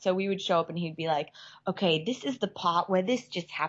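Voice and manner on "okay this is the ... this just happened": put-on British-accented speech. Speaker imitates director Will Biles explaining the plot: British accent. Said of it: "Let's hear your British accent again".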